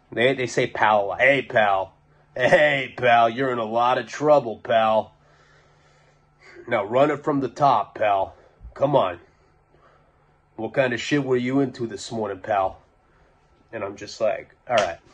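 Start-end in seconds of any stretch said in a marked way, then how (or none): 1.2-12.8 put-on heavy, thick Boston accent, laid on. Retelling how his interrogators questioned him, thick Boston accent. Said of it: "thick Boston accents".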